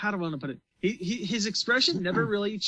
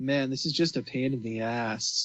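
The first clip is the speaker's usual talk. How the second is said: put-on deadpan delivery, lower pitch; 6 semitones lower than usual. Discussing Darby the Gambler, speaker imitates deadpan Jotaro. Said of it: "so deadpan throughout the entire thing".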